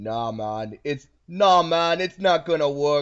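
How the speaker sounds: put-on loud Jamaican-accented voice. Asked by another player whether the begging will work, [name] answers: Jamaican accent. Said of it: "Why do you have a Jamaican accent?".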